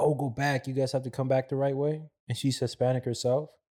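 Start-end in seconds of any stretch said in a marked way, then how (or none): 0.0-2.0 put-on stern scolding tone, half yelled. Retelling a lady at the border yelling at people crossing: imitating someone yelling. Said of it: "she's yelling at them".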